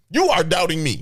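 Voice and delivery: shouting. Reacting to the other speaker doubting them: yelling. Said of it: "Why are you yelling at me?".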